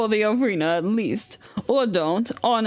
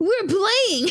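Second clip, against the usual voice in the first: put-on very high childlike voice, like little kid; 10 semitones higher than usual. Voicing Pop in the game, giving him more of a kid voice. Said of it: "I'm gonna give him more of a kid voice".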